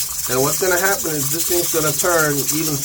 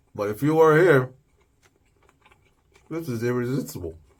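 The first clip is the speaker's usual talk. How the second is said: talking with mouth full of food; 3 semitones lower than usual. Cook explaining a recipe while tasting the food, talking with food in mouth. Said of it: "I don't mean to talk with food in my mouth".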